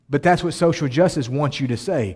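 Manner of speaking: normal talking voice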